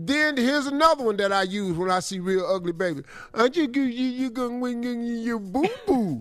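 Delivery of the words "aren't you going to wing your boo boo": put-on baby talk voice. Showing what they say on seeing ugly babies, in baby talk. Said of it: "Baby talk".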